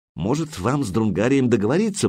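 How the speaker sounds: ordinary delivery, nothing marked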